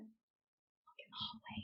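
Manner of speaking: very slow, very quiet whisper. Retelling telling a sister to look at the hallway: retelling a whisper. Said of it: "I whispered it".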